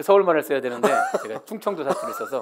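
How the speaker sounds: loud, laughing through the words.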